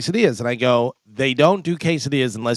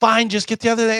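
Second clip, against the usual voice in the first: exasperated, annoyed shout pitched very high; 10 semitones higher than usual. Retelling a phone argument over a food order, imitating her yelling. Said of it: "she's yelling at me".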